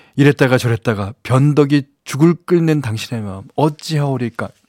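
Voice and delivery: ordinary delivery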